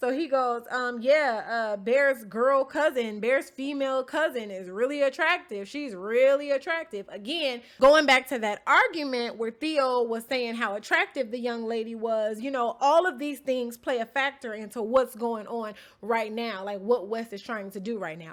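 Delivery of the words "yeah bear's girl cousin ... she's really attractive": usual speaking voice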